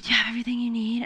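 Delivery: quiet, soft, hushed half-whisper. Retelling a half-whispered question asked in the speaker's room at night: retelling a half-whisper. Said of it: "her and Logan were like whispering".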